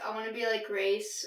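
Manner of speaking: ordinary talk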